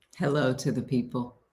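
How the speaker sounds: smooth, silky broadcaster voice. A host greets the audience before introducing a guest, smooth radio voice. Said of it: "that was a smooth radio voice".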